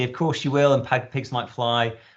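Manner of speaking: mocking, dry sarcastic brush-off. Showing parents what to avoid saying to their child: sarcastic tone.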